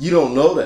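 put-on, very sassy brush-off tone. Retelling a friend's answer on the phone: imitating a sassy reply. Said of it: "And he said it real sassy".

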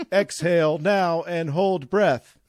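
slow, machine-like, automated AI announcer voice. Retelling the breathing commands given during the scan: imitating an ai voice. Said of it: "A I voice comes on over the music".

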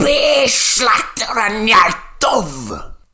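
very high, very slow, drawn-out shrieking scream. Reading a story aloud, the old hag screams the words: screaming. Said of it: "to scream the words".

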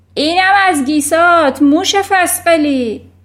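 very loud, high-pitched bellowing roar. Reading a story aloud, voicing a character roaring while swinging a screaming girl: roared. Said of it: "نعره زد".

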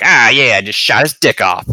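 put-on loud, blurted teen-gamer voice. Quoting a game character's line: Moze voice, like a teen Call of Duty player. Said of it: "sounds like what you would expect a fifteen-year-old playing Call of Duty to sound like".

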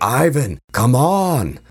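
shouting in character voice. Player narrating his character's turn as he holds his ground, character shouting. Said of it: "just shouting".

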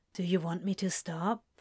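soft, gentle voice. Crowley asks Aziraphale over the phone, softly. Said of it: "Crowley asked softly".

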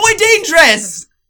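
high-pitched yelling in an Italian man's voice. Retelling telling family about a toy got for Bert: yelling like an Italian man. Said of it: "I'm yelling at like a fucking Italian man".

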